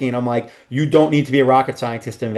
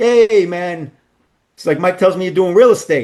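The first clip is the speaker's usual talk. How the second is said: put-on full New York mafia accent, pitched up; 6 semitones higher, 4 dB louder than usual. Retelling a guy who came up to him while hanging out, full new york accent. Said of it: "like full New York accent".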